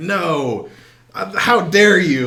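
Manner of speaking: very slow, loud, shrill, freaked-out screaming. Retelling how a seller reacted to a low haggling offer, imitating someone screaming. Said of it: "Like y- screaming at me".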